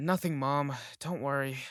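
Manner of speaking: ordinary talk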